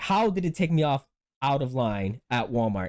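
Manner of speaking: plain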